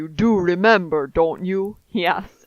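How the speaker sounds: bad, deep, low, laid-on German accent. Asked to be a bad German, the speaker tries to be Reinhardt: bad Reinhardt impression. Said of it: "I'm trying to be Reinhardt. He's a big burly man".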